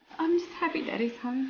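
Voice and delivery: tearful, crying voice. Answering a child who asks why the tears, crying. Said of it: "Why are you crying?".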